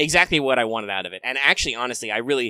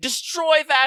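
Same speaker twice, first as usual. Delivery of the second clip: very high, shrill, play-acted anime-style yell. Retelling how the Imperial pilot voice pack yells at wingmen: imitating a tsundere pilot yelling. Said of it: "she'll yell at them".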